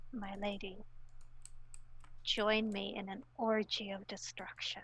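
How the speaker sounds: whispering intensely. Acting out what a character whispers while gripping your hands, intense whisper. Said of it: "and he will just whisper".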